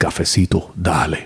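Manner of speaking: deep, low talking alligator voice. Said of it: "he said it just like that".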